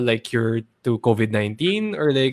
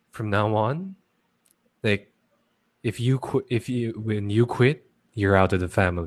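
soft, very calm, quietly menacing tone; 2 semitones lower, 5 dB quieter than usual. Retelling a villain's threatening message, imitating a very calm threat. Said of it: "Yung talagang sobrang calm niya".

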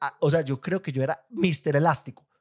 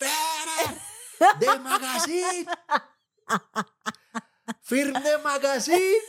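shrill, very high, drawn-out yelling; 13 semitones higher than usual. Speaker retells calling out to Federer for his signature: retelling a shout. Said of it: "Y yo le gritaba".

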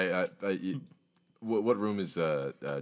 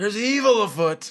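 very high shouted voice; 7 dB louder than usual. Voicing a character who interrupts an explanation: shouting. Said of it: "I shout".

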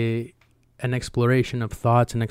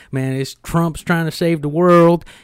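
mock rural Southern voice; 6 semitones higher, 6 dB louder than usual. Imitating how such people talk, in a put-on redneck accent. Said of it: "I don't know why I'm doing a redneck voice".

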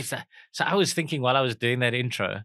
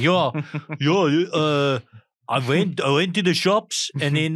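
loud, slow, clumsy fake South African accent; 3 semitones higher, 5 dB louder than usual. Mocking how people online fake a South African accent: bad South African accent. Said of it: "try to do a South African accent".

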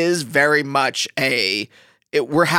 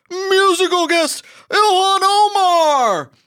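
very high, drawn-out, big announcer call, name stretched; 5 dB louder than usual. Showing how an SNL announcer introduces a musical guest: Don Pardo voice. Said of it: "I started doing Don Pardo from S N L".

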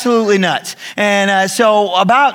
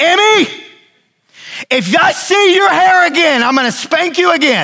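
put-on high-pitched yelling; 9 semitones higher than usual. Retelling how the wife yelled at Emmy about her hair: imitating Christy yelling. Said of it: "and Christy yells".

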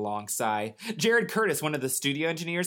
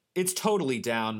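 ordinary delivery

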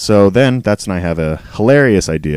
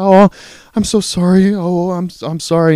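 very high, very slow, fearful drawn-out voice; 11 semitones higher than usual. Retelling what a worker said after walking in: imitating a fearful voice. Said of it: "the fear that she has in her voice is insane".

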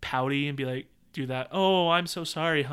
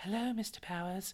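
put-on awkward-sounding, high-pitched girly voice; 6 semitones higher, 9 dB quieter than usual. Explaining why the other speaker should do the fembot lines: awkward high fembot voice. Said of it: "if I try to go high".

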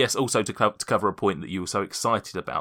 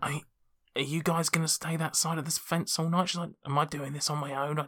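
anxious squirrel voice, much higher; 7 semitones higher, 5 dB quieter than usual. Bum the Squirrel at the gate, urging the group over the fence, anxious Bum the Squirrel voice. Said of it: "[name] the Squirrel. / and he is just really anxious to get this going. / and he is just really anxious to get this going".

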